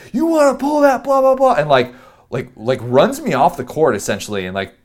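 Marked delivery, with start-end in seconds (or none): 0.2-1.6 put-on loud, very high, angry cursing yell. Retelling how someone stopped the game to yell at him: imitating someone yelling. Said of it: "stops the game to yell at me and says".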